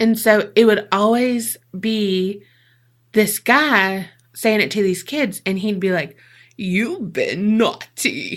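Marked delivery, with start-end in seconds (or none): 6.6-8.4 animated put-on voice, pitch swooping widely up and down. Retelling a Christmas special preview where Krampus tells kids off: Sean Connery type voice. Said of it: "this Sean Connery type of voice for it".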